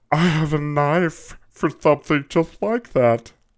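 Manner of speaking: high, loud squeaky voice, all power gone. Quoting a line he says in this one, imitating his high squeaky voice. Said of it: "did somebody kick you in the nuts".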